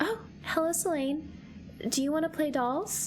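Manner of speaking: soft dreamy voice. Asked to do a voice like a beam of starlight: soft, dreamy voice. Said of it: "my best impression of soft, dreamy, like a beam of starlight".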